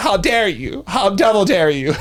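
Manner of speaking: mock-offended, high-pitched, outraged diva gasp.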